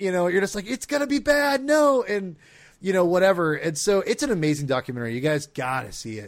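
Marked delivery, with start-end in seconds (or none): 0.7-2.0 put-on, shrill, high, raised yell. Retelling reactions to a documentary, yelling at the TV: retelling own yelling at TV. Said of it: "yelling out loud to my T V".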